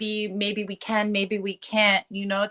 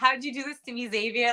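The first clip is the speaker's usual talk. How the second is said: voice cracking and breaking, on the verge of tears; 3 semitones higher, 4 dB quieter than usual. Remembering someone close who drowned, asking the other speaker, about to cry. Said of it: "I'm gonna cry".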